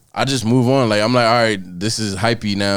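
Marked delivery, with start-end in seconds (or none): none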